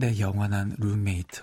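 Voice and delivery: sultry, suggestive reading.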